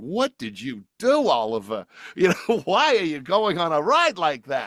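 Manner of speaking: mock high, swooping speech through giggles. Retelling how the grandmother spoke after the ride: imitating someone laughing while talking. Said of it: "she's, like, laughing".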